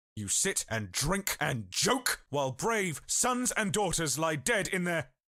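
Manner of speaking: losing composure in anger. Confronting a speaker who called dead friends expendable pawns: losing composure in anger. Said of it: "I lost my composure".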